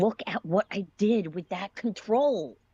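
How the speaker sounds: high, snarling voice. Narrator reading a character's line in a story, snarling. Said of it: "he snarls".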